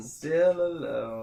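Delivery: words echoed back like an echo. Describing a scene where someone mimics a voice like an echo, giving the echoed line. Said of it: "He's able to mimic the voice, uh, make it sound like an echo".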